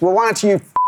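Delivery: high, far-off, frightening barking voice.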